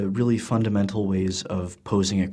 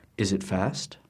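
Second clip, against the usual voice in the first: usual speaking voice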